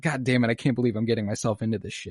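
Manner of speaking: acted, mock-annoyed, angry grumbling. Speaker retells a show character's reaction, acting out pissed annoyance. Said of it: "He's pissed that he's doing the good thing".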